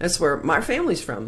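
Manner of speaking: normal talking voice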